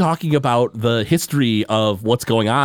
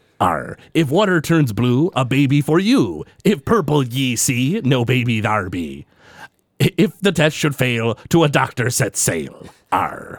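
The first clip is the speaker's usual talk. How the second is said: put-on pirate accent voice. Pitching a pregnancy test with a free corncob pipe, in a put-on pirate voice. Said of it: "I'd like to do it with a pirate voice".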